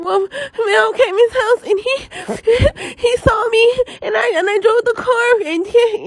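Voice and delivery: very high, slow, drawn-out blubbering ugly crying. Retelling confessing to mom on the phone: imitating own ugly crying. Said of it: "I get the ugly crying".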